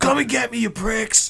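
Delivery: raw, rough, very high acted-out hollering scream. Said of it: "screaming at the gun".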